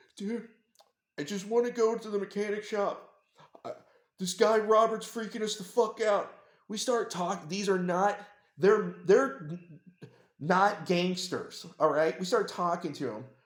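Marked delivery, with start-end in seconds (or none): 0.2-6.3 high, tearful, weepy voice through crying. Retelling what a scared teenager said while crying: imitating someone crying. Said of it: "he starts, like, literally, like, crying".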